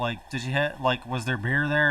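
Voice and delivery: ordinary talk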